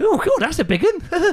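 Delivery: mock soldier voice, high, slow, gasping and laughing.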